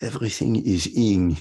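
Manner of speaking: English in a put-on French accent. Retelling what a woman would always say: imitating her French accent. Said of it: "she would say this with a French accent".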